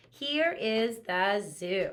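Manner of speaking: even, settled, calm sentence delivery. Showing the class how to read a sentence that ends in a period: nice calm statement. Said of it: "just like a nice".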